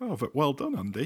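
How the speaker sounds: surprised, taken aback. Speaker congratulates Andy on a correct football answer, surprised. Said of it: "You sound surprised".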